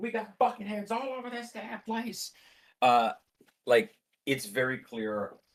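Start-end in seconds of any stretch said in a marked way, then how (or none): 0.0-2.3 frantic, panicked, very high-pitched voice. Narrating a scene as another voice comes in, panicking APF voice. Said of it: "they're panicking".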